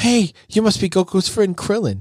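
very high, sweet, lovey-dovey voice. Retelling a scene where Chi-Chi greets old friends: lovey-dovey Chi-Chi voice. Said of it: "she's all lovey-dovey and she's like".

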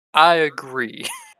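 authoritative voice. Agreeing to serve a master, on request: saying it with authority. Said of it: "Say it with authority".

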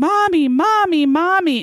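mock, high, desperate screaming yell, over and over. Retelling a 911 call as the woman goes into the bathroom, retelling a yell. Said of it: "And she's yelling".

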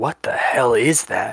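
slow, hushed half-whisper, spoken lightly. Voicing the captain reacting to a strange structure ahead: half-whispering.

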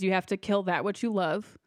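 plain

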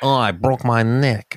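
put-on slow, drawling New York accent. Imitating Buster Keaton after saying he had a New York accent. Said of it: "He had a real, like, New York accent".

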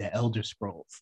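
very soft, hushed, breathy half-whisper. Retelling a half-whisper in the ear during the vows: imitating Josh half-whispering. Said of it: "he just whispers".

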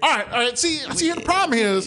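put-on thick country accent. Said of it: "thick ass country accent".

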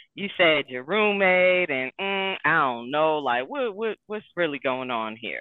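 low, slow, skeptical casual tone. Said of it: "I'm like".

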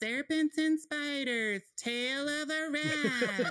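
high, slow, breathy mock medium voice.

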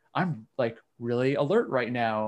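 plain

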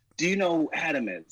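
put-on irate, confrontational, angry, high-pitched voice. Retelling a talk with an angry man in a shop: imitating an angry man. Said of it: "he was so angry".

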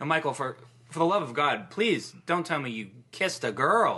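very sarcastic, pleading tone. Asking Michael about his love life: sarcastic. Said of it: "the priest is being sarcastic".

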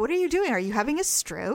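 ordinary talk, nothing marked

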